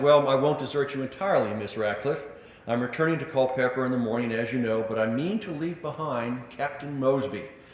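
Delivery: normal talking voice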